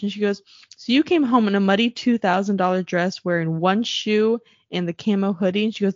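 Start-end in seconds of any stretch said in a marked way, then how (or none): none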